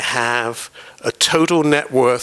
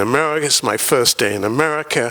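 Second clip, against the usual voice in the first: plain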